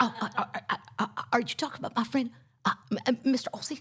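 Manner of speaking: playful, fun preacher-style delivery. Retelling how someone joined in his impression of a man; impression of a preacher. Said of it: "I do my impression of him".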